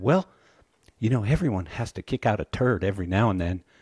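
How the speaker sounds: put-on quick Texas accent all the way through. Retelling a memorable line said about a bad product: Craig's Texas accent. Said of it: "in his Texas accent".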